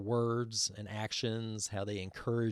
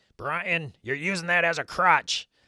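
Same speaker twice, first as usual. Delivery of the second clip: hoarse, rasping, raised voice; 7 semitones higher, 7 dB louder than usual. Retelling what a man who always corrected him would say, in a raspy voice. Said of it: "he would just say in his raspy voice".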